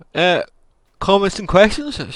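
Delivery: very high, loud speech stretched through a yawn. Channel host just off work, moving on to comments and questions: yawning. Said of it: "Sorry, I'm yawning".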